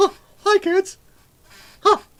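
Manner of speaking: pitched way up, taken slowly. Trying out a voice for reading a viewer's link: Mickey Mouse voice. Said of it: "so we'll do Mickey Mouse".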